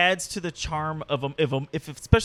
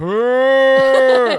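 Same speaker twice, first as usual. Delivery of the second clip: very loud, drawn-out, startled manly scream; 9 semitones higher, 13 dB louder than usual. Imitating an actor yelling at a ghost: imitating Sam Neill's manly yell. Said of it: "Like when Sam Neill sees that first".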